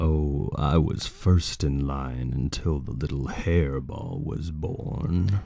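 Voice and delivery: sly villain voice, pitched low. Acting out a scene with a partner, delivering the line in a Scar voice. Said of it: "So Scar goes. Go on".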